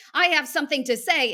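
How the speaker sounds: aggressive forceful tone. Showing how a phrase can sound, aggressive tone. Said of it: "you can hear the aggress- aggressiveness in the voice".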